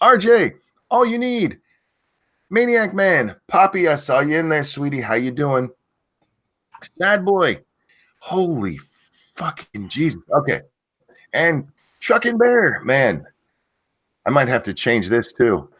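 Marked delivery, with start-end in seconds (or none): 0.0-12.8 high, loud, yelled-out hollering. Greeting viewers one by one by name, yelling out names. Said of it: "why are you yelling out names?".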